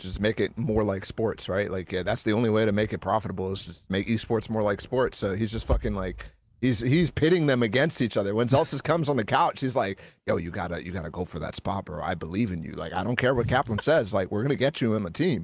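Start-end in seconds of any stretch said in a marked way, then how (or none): 10.3-15.4 hushed, conspiratorial, scheming, half-voiced stage whisper. Imitating a team owner urging a player onto the team: imitating a conspiratorial half-whisper. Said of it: "he's whispering like he's fucking Game of Thronesing it".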